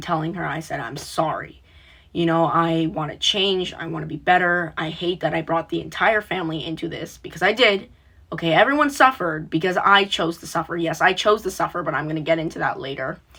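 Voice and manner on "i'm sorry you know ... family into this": ordinary talk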